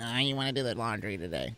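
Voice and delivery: whining put-on voice. Demonstrating how your wife does not sound: whiny voice. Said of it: "my wife doesn't have a whiny voice".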